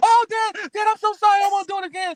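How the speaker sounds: put-on screams of pain. Retelling pretending to be hit by a belt: retelling a fake scream of pain. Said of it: "I want you to scream like I'm hitting you".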